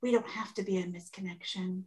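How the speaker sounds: whisper under breath. Recapping a scene, retelling what a man says while she lies down, whispering under his breath. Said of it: "he whispers under his breath".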